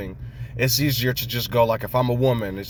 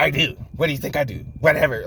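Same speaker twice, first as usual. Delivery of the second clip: mock babyish, childish voice, higher; 3 semitones higher than usual. Retelling how a partner answers criticism: imitating a childish partner. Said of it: "like a little big ass fucking forty-seven-year-old little baby".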